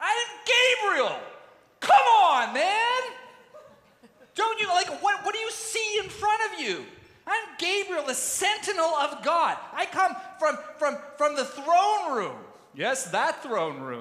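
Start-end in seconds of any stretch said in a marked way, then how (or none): 0.0-12.4 affronted, very high angel voice. Retelling the story, the speaker answers a doubting old man, imitating offended Gabriel. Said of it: "Gabriel gets offended".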